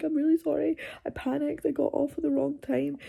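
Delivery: put-on high, tearful crying voice. Retelling apologizing at an information desk after a panic attack: retelling a tearful apology. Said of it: "I went there and I'm crying".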